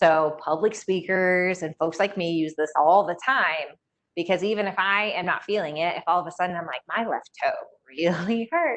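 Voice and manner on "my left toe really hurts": smiling while speaking. Showing how a smile carries in the voice despite pain: smiling while speaking. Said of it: "but I'm smiling and I'm going along just fine".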